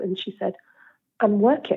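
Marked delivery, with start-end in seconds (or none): 1.2-1.8 scornful, disgusted voice. Retelling another mum's reply at the school gates: imitating a disgusted reply. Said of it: "she just looked at me in disgust".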